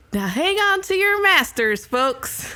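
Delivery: high camp counselor loudspeaker announcer voice.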